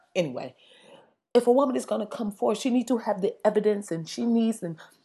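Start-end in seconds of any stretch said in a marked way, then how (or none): 1.3-4.7 soft, bad, put-on broken English accent. Mocking a woman who wants to question Barack Obama: mocking broken English accent. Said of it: "I want to do her accent".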